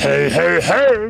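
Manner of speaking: creaky, raspy cartoon voice. Recalling a catchphrase loved since childhood, doing a Fat Albert impression. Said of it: "my best impression of Fat Albert".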